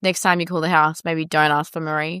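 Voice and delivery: dead serious, flat, cold deadpan. Imagining how she might have delivered the line: deadpan, cold, serious. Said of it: "been deadpan serious and been like".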